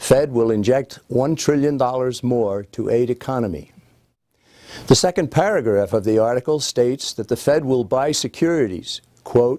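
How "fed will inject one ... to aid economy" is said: ordinary delivery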